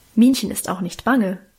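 plain

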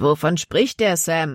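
ordinary delivery, nothing marked

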